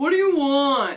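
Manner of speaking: loud yell. Retelling a husband's reply from the bottom of the stairs, imitating someone yelling. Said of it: "he yells from the bottom of the stairs".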